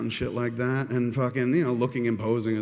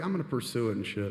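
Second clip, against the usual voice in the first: normal talking voice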